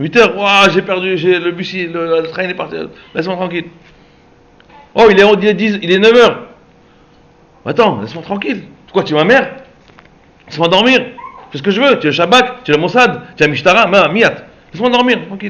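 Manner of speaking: high, loud, furious, angry yell.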